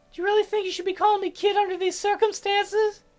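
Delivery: very high, gentle teasing with faint sing-song lilt. Teasing the doctor for calling the narrator kid: gentle teasing, faint sing-song tone. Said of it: "I tease him gently, a faint sing-song tone to my voice".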